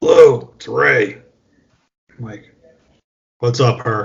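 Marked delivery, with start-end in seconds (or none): 0.0-1.2 rough, raspy, gravelly, creaky voice. Retelling a one a.m. phone call as the caller greets: imitating Ray's gravelly voice. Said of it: "I hear this gravelly voice".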